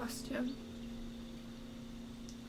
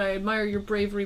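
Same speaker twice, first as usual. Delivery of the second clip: ordinary talk, nothing marked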